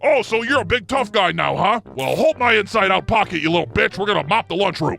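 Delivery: heavy, deep, mannish woman's voice. Acting out a scary lunch lady scolding a kid, deep manly voice. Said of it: "(Deep manly voice)".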